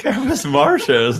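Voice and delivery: slow camp voice with wide pitch range.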